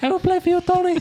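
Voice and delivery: high-pitched put-on Spanish accent. Answering Tony Jacklin in a put-on voice: high-pitched mouse Spanish Seve Ballesteros voice. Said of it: "high-pitched ma-, mouse Spanish version of Seve Ballesteros".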